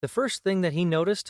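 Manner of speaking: plain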